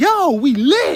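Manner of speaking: booming, hyped shout, very high and very loud. Acting out your mind's first words the moment you are born, acting out a yell. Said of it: "Why are you yelling?".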